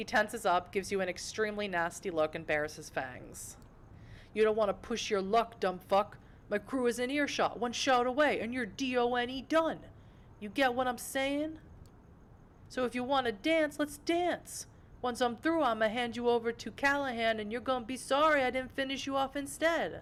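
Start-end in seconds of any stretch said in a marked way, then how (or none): 4.3-20.0 higher-pitched, threatening tough-guy voice. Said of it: "try and imitate a Brujah very well".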